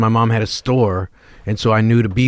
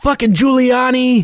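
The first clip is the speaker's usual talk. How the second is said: put-on very high, screamed outburst; 14 semitones higher than usual. Retelling how a van driver yelled at a fallen old woman: imitating someone screaming.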